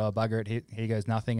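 normal talking voice

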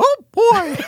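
very high-pitched little cartoon mouse voice. Suggesting a cartoon replacing curse words: Mickey Mouse voice. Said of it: "it's Mickey Mouse going".

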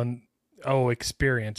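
normal talking voice

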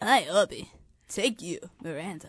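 low-pitched dude-bro frat guy voice. Playing a character taking wedding vows; frat guy impression. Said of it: "Can I get a frat guy impression real quick?".

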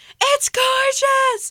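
very loud, high-pitched shriek or scream. After being misheard twice, she repeats herself; the speaker retells her scream. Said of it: "And she screams it".

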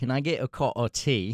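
failed, botched attempt at a British accent. Prompted to try, speaker attempts a British accent. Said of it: "if you want [name] to try an English accent".

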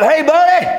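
high, loud yelled call.

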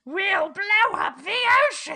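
very high, loud, swooping villain screech. Talking about a shared voice actor, a podcaster does a Cobra Commander impression. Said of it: "It's like a very, like".

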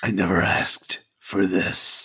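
breathy, breathed-out, nearly whispered delivery. Taking a turn in a round of impressions, Adam Jensen impression. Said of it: "in that Adam Jensen voice".

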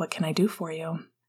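ordinary delivery

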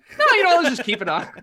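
very high, loud, breezy put-on voice. Retelling what Tim said about keeping the edit: Tim impression. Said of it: "you do a very good Tim impression".

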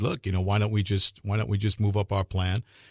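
ordinary delivery

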